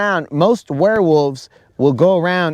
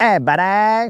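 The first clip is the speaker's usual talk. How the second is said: put-on Canadian accent, higher pitched; 4 semitones higher than usual. Acting out a friend turned into a were-Canadian: Snizook as a were-Canadian. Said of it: "There's a were Canadian on the loose".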